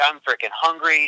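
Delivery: ordinary delivery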